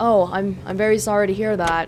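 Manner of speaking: imitated flat delivery. Describing how a man reacted when told a patient had died, doing an impression of his voice, imitating a monotone voice. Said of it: "In a very monotone way".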